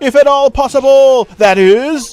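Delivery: loud, high-pitched shout at full volume. Asked not to shout so much, promising to try; shouting. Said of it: "I'll try not to shout so much".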